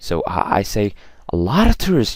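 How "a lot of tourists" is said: very high, loud, eager emphasis on "lot". Speaking lesson on stressing important words: enthusiastic emphasis. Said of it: "show enthusiasm and stress the important word".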